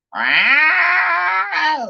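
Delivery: high, loud cat yowl at top of lungs.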